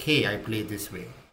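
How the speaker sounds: normal talking voice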